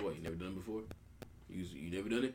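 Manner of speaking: put-on elderly man voice.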